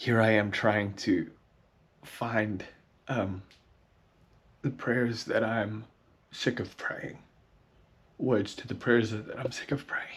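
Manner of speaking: crying, tearful voice while speaking. Searching for the words to prayers she is sick of, crying while speaking. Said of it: "I'm like crying as I'm doing this".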